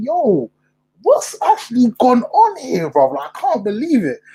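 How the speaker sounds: stunned, disbelieving tone. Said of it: "I'm just looking at West Ham thinking".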